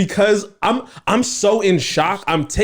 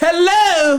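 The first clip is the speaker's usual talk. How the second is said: very high put-on British accent, old lady voice; 12 semitones higher, 3 dB louder than usual. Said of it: "so there's an accent".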